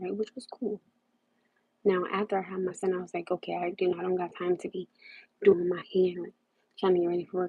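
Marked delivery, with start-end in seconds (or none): none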